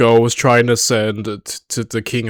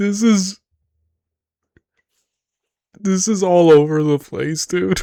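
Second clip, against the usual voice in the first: talking through laughter, higher; 8 semitones higher than usual. Reacting to a wild scene in a show, laughing while talking. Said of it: "I'm trying not to laugh so hard".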